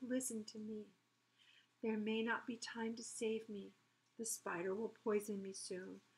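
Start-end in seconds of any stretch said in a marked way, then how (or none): none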